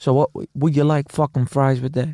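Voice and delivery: imitated New York manner. Joking about new york coffee servers who talk like the comedian: imitating a new york server. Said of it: "a bunch of people just speaking like that".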